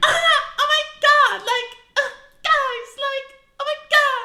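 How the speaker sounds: squeaky, very high, very drawn-out gushing voice. Imitating mom talking to people she doesn't know: imitating mom's different-pitch date voice. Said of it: "your voice just, like, turns into a different pitch".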